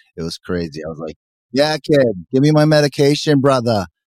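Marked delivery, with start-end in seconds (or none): 1.5-3.8 put-on loud, big, higher-pitched Boston accent. Retelling own words from the hospital in a wicked boston accent. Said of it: "I sounded like Matt Damon".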